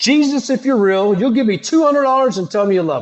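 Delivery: mock high scream at full lung power. Telling a story about flying a sign at sunrise, retelling a scream at top of lungs. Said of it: "I scream it at the top of my lungs".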